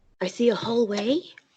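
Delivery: high-pitched, hushed half-whisper. Half-whispering back to a companion in character about the hallway: half-whispering. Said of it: "I will whisper back".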